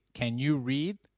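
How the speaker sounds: plain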